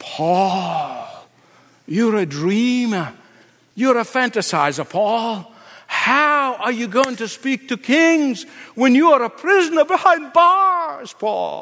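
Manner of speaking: sanctimonious, preachy devil voice, "Paul" drawn out. The speaker imagines the devil taunting a prisoner, in a mock-pious devil voice. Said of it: "He has this pious voice".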